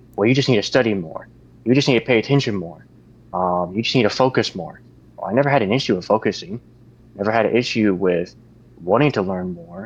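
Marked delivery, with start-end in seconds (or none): none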